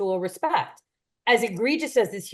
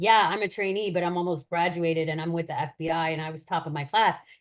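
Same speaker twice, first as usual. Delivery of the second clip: ordinary talk, nothing marked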